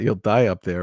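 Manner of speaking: ordinary talk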